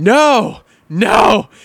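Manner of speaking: put-on wild, high, swinging, swooping scream. Recounting a play to the person who made the pass, retelling a scream. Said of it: "I'm screaming".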